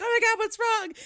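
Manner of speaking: mock very high, loud, frantic panicked cry. Retelling a woman running through the house, the speaker imitates her panicking. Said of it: "So she's panicking".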